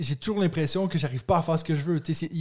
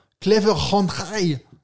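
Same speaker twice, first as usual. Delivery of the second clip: put-on German accent, louder; 2 semitones higher, 5 dB louder than usual. Naming a game that is in German, in a German accent. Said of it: "Avec un accent allemand toujours magnifique".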